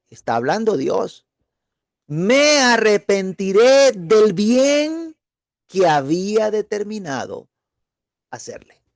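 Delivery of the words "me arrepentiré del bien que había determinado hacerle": slow, deliberate, raised reading voice. Speaker rereads a bible verse aloud to listeners, reading more slowly. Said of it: "Voy a volverlo a leer y un poquito más despacio".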